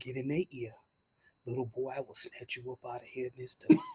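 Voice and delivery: voice dropped right down, deep and low. Recounting talking into a little boy's ear, in a deep voice. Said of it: "So I would get my deep voice like this".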